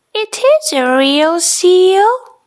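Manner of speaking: said with pride. Noah replies to Nana as the rain falls, proudly. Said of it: "says Noah proudly".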